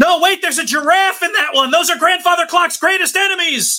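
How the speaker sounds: very high, hurried, rushed screaming. During a fight scene, a storyteller voices the character Clyde, Clyde screaming. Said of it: "And Clyde screams".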